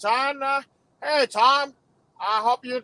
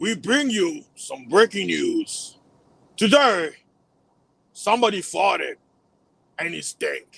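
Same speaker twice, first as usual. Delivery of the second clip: serious, deep, put-on TV news anchor voice; 5 semitones lower than usual. Joking about how news presenters talk: deep news anchor voice. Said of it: "they have to make their voice deeper".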